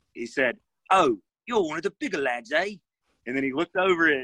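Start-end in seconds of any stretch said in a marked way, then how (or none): 0.9-2.8 put-on speaking in a British accent. Recalling the first thing a guy on the plane said to him; imitating a British accent. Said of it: "He had a British accent".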